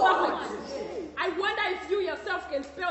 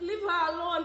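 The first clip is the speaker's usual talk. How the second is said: plain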